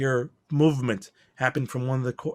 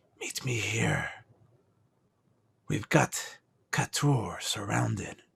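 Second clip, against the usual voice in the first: hushed, secretive whisper; 3 semitones lower, 5 dB quieter than usual. Narrating a scene where a character whispers into a small circle: whispering. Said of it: "he whispers into it".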